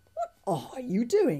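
curious tone. Narrator reads a character questioning someone who is speaking to a dragon, curious. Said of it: "asked Fishlegs curiously".

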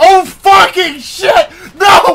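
loud, drawn-out startled yell.

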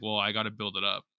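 plain

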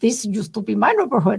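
terrible, failed put-on German accent. Speaker voices people of a century ago claiming the neighborhood, terrible german accent. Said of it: "That was a terrible German accent".

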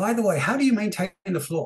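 offhand afterthought tone. You show how Columbo would always turn around and ask one more thing, in a Columbo impression. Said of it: "Kind of like Columbo".

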